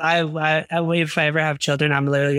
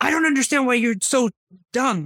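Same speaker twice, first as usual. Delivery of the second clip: acted, pitched-up angry fed-up dad losing his temper; 8 semitones higher than usual. Retelling a dad losing patience over schoolwork: imitating an angry dad. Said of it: "get to the point of anger".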